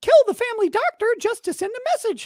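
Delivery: squeaky high pitch. Reading a random line in a Mickey Mouse voice. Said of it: "What should I say in Mickey voice?".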